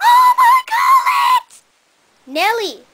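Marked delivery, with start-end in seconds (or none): 0.0-1.6 high, loud, screaming fangirl shriek. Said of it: "calm down, girl".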